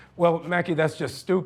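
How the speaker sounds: ordinary talk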